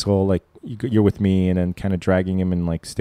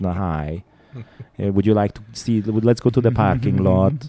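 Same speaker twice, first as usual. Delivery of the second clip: put-on Hungarian accent. Speaker imagines talking differently as an immigrant, in a Bela Lugosi Hungarian accent. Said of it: "I'd have like a Hungarian accent".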